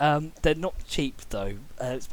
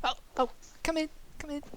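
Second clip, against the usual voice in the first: very high-pitched character voice; 12 semitones higher, 4 dB quieter than usual. Voicing Alice greeting the players entering the shop: Alice character voice. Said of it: "you just see Alice go".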